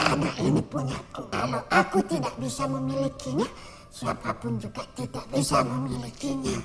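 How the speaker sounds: put-on breathy, hushed elderly woman's whisper. Storyteller voicing a woman whose voice suddenly changed, in an old grandmother voice. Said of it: "berubah macam suara nenek-nenek".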